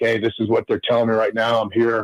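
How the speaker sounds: ordinary delivery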